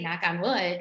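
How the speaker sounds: ordinary delivery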